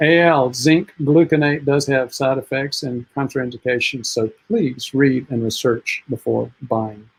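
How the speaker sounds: usual speaking voice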